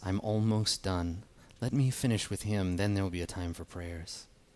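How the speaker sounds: hushed, ghostly spirit-like half-whisper. Voicing a spirit speaking up from the ice, half-whispering spirit voice. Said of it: "you can hear her kinda whispering".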